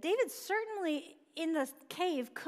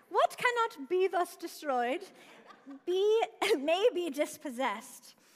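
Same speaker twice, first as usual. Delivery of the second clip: high loud put-on Scottish accent. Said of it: "I'm gonna read this in Scottish accent".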